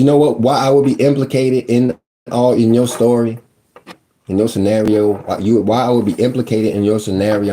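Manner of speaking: ordinary talk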